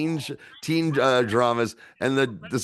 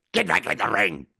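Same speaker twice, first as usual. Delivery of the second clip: low, raspy, rasped-out voice; 5 semitones lower than usual. Recounting a referee in a fight scene, doing Harvey Fierstein's raspy voice. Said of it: "he's got a very raspy voice".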